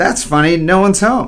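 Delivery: ordinary delivery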